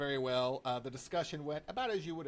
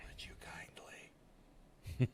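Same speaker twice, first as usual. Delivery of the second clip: soft, breathy whisper. Asked to whisper video game lines, say it whispering. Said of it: "whispering video game lines".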